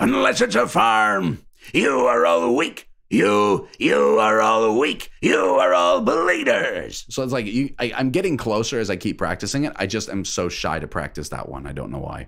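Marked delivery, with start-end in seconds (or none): 0.0-7.1 put-on loud, slow, yelling old-man voice. Practicing a character's lines, doing a yelly old man voice. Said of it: "really like old old man kind of sound, but you make him you know yelly".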